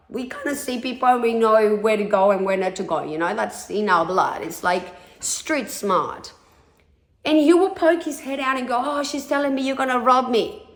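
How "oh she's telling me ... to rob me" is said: put-on Spanish accent, pitched up. Retelling what a man said to her, in a Spanish accent. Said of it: "in a Spanish accent".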